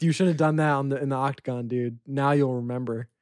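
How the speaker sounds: plain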